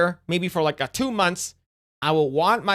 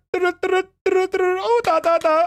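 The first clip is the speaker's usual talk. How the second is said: put-on Indian man's accent, higher pitch; 12 semitones higher than usual. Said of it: "it's like an Indian guy, like".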